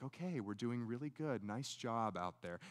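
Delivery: very quiet, low, calming, soothing coach-like voice. Showing how a coach talks to a fighter mid-fight, in a soothing, calm voice. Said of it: "a soothing, calm voice".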